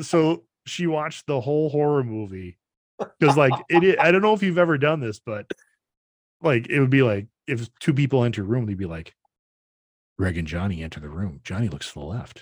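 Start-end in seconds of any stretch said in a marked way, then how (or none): 10.2-12.4 flat, low, level, described-video style monotone narration. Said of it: "this weird monotone".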